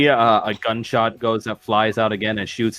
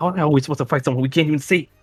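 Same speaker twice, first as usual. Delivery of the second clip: hushed whisper, higher pitch; 5 semitones higher than usual. Voicing Irina asking how to fight someone unseen: whispering. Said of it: "whispers out".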